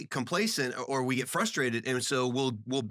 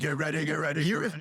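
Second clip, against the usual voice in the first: pulpit preacher style, repeated rallying cry delivery; 3 semitones higher than usual. Recalling an impression he stopped before doing: imitating T D Jakes. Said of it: "got to my T D Jakes and be like".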